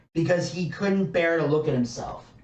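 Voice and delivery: plain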